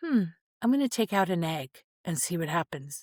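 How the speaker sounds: plain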